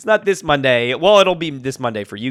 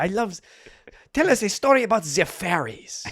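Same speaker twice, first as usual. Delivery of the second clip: put-on soft, high-pitched small boy voice with French accent; 5 semitones higher, 5 dB quieter than usual. Describing roles in a show, demonstrating the french boy character: little french boy accent. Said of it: "I have a little French boy accent".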